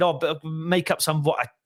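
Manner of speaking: ordinary talk, nothing marked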